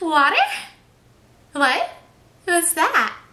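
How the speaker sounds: squeaky, very loud, high-pitched swooping voice, playing dumb. Speaker advising how to act around guys, demonstrating a really high-pitched voice. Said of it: "talking in a really high-pitched voice".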